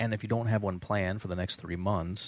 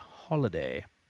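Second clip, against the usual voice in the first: clumsy, bad put-on Australian accent; 3 semitones lower than usual. Saying the Australian word for vacation: bad Australian accent on holiday. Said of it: "please forgive my bad Australian accent".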